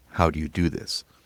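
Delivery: ordinary delivery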